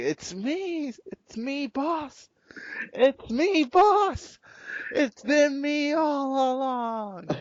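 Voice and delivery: high, dragged-out delivery. Acting out a joke game theory ending, Vince McMahon impression. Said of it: "Vince will be there and be like".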